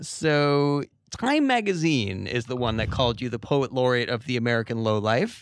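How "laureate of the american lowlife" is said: usual speaking voice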